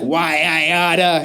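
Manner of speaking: cartoon sailor voice, winding up. Retelling own past words while winding up: Popeye voice. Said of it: "winding up like Popeye".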